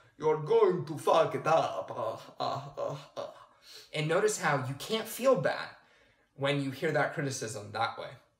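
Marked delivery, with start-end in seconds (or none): 0.2-3.3 cartoon-style vampire voice. Showing how to hear inner criticism differently, say it in a Count Chocula voice. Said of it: "make it sound like Count Chocula".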